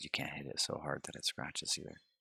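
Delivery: normal talking voice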